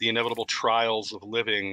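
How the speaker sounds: ordinary talk, nothing marked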